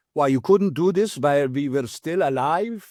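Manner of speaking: put-on Hungarian accent. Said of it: "I don't do a great Hungarian accent".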